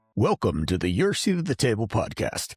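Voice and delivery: big, swooping put-on radio announcer voice. Host opening the podcast, finally trying out his radio announcer voice. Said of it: "I've always wanted to use the radio voice".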